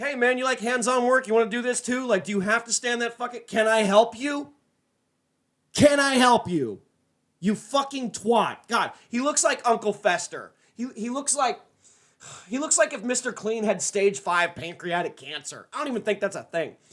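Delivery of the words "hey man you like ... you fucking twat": raised, mock rude, hostile snapping. Acting out what a rude reply would have been: acting out a rude retort. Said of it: "a totally rude dick and be like".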